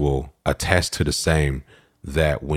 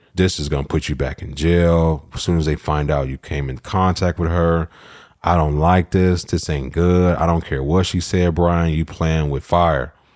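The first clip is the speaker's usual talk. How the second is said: plain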